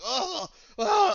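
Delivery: high, loud mock cry of pain.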